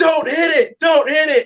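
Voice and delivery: mock very high-pitched, stretched-out scream. Retelling watching the truck on a little TV: imitating own screaming. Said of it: "I'm just screaming like".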